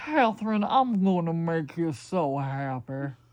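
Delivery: put-on loud Southern American accent. Retelling an old suitor's line to Catherine, in Prince Thomas's Southern accent. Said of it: "He had a southern accent like this".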